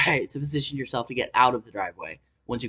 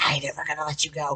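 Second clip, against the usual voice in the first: soft, hushed whisper, very close; 3 semitones higher, 5 dB quieter than usual. Retelling what a man said while grabbing her hair: imitating a whisper. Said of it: "whispers in my ear".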